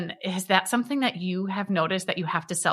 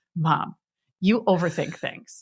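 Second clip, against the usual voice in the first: mad, fed-up, exasperated tone. Retelling a daughter's reply to an apology: imitating her mad daughter. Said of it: "She's so mad".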